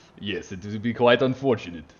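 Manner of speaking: clumsy, butchered Russian accent. Commenting on a race partnership in a butchered Russian accent. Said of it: "my, uh, accent is quite offensive".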